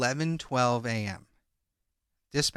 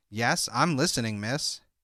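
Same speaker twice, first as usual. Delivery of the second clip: ordinary delivery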